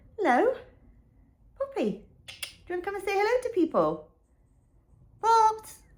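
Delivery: very high, sing-song, cooing pet talk voice. Greeting her cat Poppy as it comes to say hello, in her cat voice. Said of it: "My cat voice".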